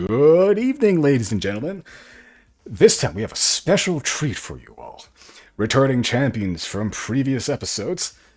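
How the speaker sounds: very loud, booming, swooping robot game-show host voice. Voicing a sequined robot with a microphone greeting the crowd: robot announcer voice. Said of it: "this robot with, like, lenses in it kind of zooms up towards you".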